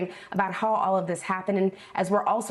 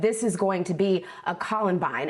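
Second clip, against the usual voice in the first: plain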